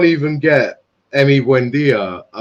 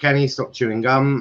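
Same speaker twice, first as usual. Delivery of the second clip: ordinary talk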